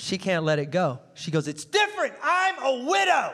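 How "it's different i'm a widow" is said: yelling out loudly. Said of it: "She yelled this out".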